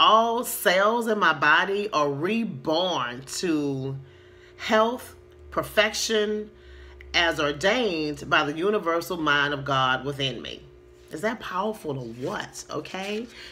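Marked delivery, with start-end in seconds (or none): 0.0-10.6 as slow as possible, slow and deliberate. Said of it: "I'm gonna try to say it as slow as possible".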